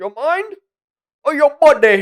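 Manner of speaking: put-on Jamaican accent, pitched way up, slow. Imitating the villain's fight line the way he says it: jamaican accent. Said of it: "but the way he says".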